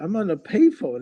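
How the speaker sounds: put-on high, thrilled, excited kid voice.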